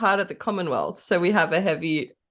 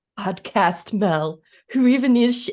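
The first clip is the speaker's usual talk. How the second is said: put-on American accent, loud, gloomy, doom-and-gloom tone; 4 semitones higher, 5 dB louder than usual. Describing her own grumpy mood about podcasting; mock-gloomy american voice. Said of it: "my gloomy voice is American".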